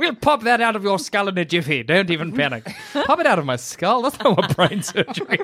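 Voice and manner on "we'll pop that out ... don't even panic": put-on upper-class British accent. Talking to Jackson before brain surgery, in a high-class British accent. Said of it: "high class British accent".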